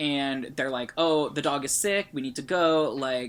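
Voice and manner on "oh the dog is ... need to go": usual speaking voice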